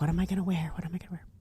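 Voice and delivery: soft, voiceless, worried, panicked whisper. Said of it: "I'm like".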